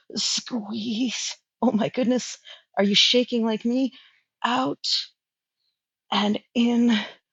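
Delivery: strained effortful voice. Coaching listeners through the last reps of an exercise, more intense voice. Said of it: "the intensity in my voice has changed".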